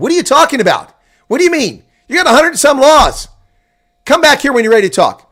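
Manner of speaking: very high, very loud, shrill angry outburst. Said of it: "why are you yelling at us?".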